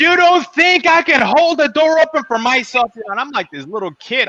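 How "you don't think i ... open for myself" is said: put-on, very high, shrill, indignant scolding yell. Retelling a dressed-up lady scolding a kid for holding a door open: imitating someone yelling. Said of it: "she just lays into me".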